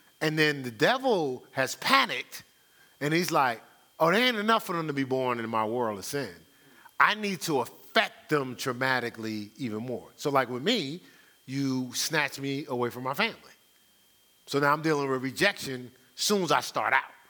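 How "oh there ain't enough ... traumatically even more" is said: ordinary delivery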